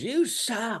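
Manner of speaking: piercing, shrill, very high, top-of-the-lungs scream. Retelling a front-row guy's heckle at a comic: imitating a heckler screaming. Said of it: "Guy in the front row screams, top of his lungs".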